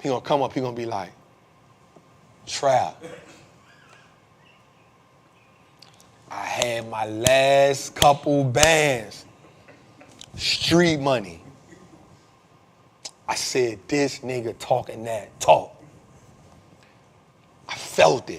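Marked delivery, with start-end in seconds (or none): 2.5-11.4 very slow dragging drawl, last word stretched. Retelling what a guy said to him, imitating a slow talker. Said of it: "speed up a little bit".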